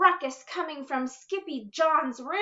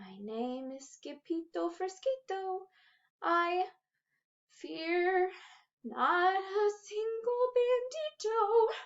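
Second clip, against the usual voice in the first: hushed, very soft little voice, slow, pitched up; 4 semitones higher, 6 dB quieter than usual. Narrator reading a frightened sword fighter's reply, in a very soft voice. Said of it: "muy soft voice".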